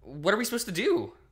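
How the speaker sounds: voice shooting up into a very high cry. Narrating a story, the narrator asks what they are supposed to do, voice rising in pitch. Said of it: "My voice raises to a pitch".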